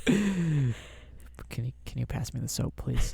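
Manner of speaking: whispering. Answering what to whisper into a listener's ear in the shower: whispering. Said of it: "What are you gonna whisper?".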